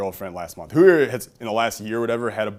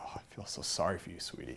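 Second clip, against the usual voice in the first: soft whisper, pitying tone; 4 semitones lower, 18 dB quieter than usual. Retelling how the temp pityingly comforted a coworker: imitating a pitying tone. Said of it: "pitiful look".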